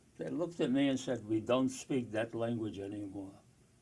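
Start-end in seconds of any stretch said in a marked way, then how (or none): 1.3-3.3 put-on English spoken with a Yiddish accent. Retelling how two men answered him when he spoke Yiddish, Yiddish accent. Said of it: "in a Yiddish accent".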